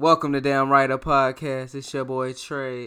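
very loud, high-energy, hyped delivery. Podcast host restarts the show's welcome intro, high energy. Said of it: "Here go the energy".

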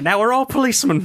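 put-on Irish accent. Joking about Saint Patrick's Day on an all Irish episode: put-on Irish accent. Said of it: "yours is great".

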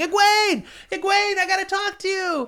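shrill, very high-pitched shouting. Recapping a story scene, retelling a character shouting. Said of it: "he just started shouting".

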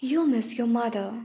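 hushed whisper. A man holding the narrator's gaze speaks to her, whispered. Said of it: "he whispered".

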